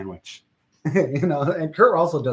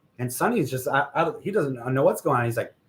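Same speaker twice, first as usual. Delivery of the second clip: ordinary delivery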